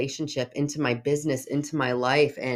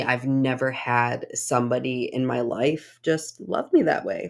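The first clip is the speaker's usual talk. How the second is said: voice catching, choking up, near tears. A speaker says they've never had somebody love them that way, about to cry. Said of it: "now I'm going to cry".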